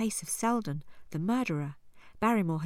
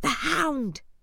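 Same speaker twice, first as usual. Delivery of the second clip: loud, high, sudden shouted cry; 9 semitones higher, 5 dB louder than usual. Holmes hears a howl in the distance and cries out: shouted. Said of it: "shouted Holmes".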